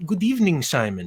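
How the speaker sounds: exaggerated, terrible, broken put-on German accent. Playing Captain Achleitner, the speaker greets Simon in a terrible broken German accent. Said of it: "in my terrible broken German accent says".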